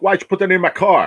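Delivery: play-acted, very high, furious, angry yell. Retelling a parking dispute, the speaker quotes the guy who confronted them, retelling a guy yelling. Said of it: "I don't know why you're yelling".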